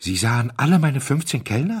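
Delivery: stammering. The owner, nearly paralysed with surprise, turns to the duke: stammering. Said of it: "stotterte er".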